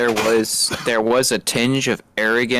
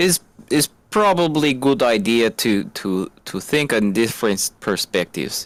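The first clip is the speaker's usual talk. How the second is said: bad, put-on, fake Russian accent. Discussing someone's NBC interview, the speaker talks in a bad Russian accent. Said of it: "this is Russian accent at the moment".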